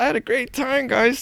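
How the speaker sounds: very high-pitched, forced through gritted teeth. Retelling own past words after the shifter cart story: imitating saying it through clenched teeth. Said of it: "teeth clenched".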